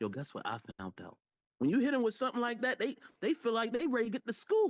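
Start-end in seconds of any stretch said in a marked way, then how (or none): 0.0-1.2 gossipy, low, hushed half-whisper. Explaining how half-whispering hooks people, demonstrating an opener: half-whisper. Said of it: "When I whisper".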